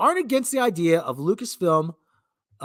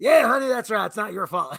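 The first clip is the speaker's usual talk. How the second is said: put-on reassuring voice, higher pitch; 3 semitones higher than usual. Mocking someone who agrees with the blame: imitating Frank Marshall. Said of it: "Frank Marshall's like".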